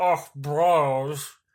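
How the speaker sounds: mock talking with mouth full. Imitating the other speaker talking with food in mouth: imitating talking with mouth full. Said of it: "you have it in your mouth going".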